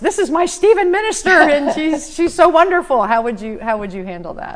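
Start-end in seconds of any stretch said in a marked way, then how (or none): 0.0-3.0 put-on loud boisterous voice, much higher. Describing a care receiver speaking up in the church lobby, acting out a loud boisterous voice. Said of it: "in a very loud, boisterous voice".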